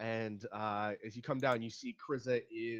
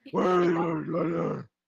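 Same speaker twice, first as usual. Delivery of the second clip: slow, stretched-out, loud growling voice.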